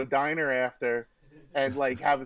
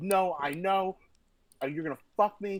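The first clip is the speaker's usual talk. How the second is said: mock scream, higher pitch; 4 semitones higher than usual. Retelling his best friend's outburst over an election, imitating someone screaming. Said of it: "And he's screaming at me".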